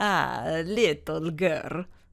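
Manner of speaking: put-on heavy, thick, laid-on Italian accent. A man answers a girl asking for the Santa Florian del Fuoco, in a thick Italian accent. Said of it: "he said in a thick Italian accent".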